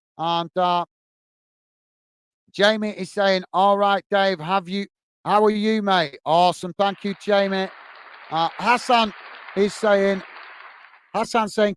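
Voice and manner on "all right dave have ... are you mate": ordinary delivery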